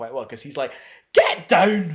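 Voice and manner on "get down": put-on very loud, over-the-top, outrageous Scottish accent bellow. Imitating Simon Pegg's Scottish accent in Star Trek: Simon Pegg's over-the-top Scottish accent. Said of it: "go completely ridiculous on an accent".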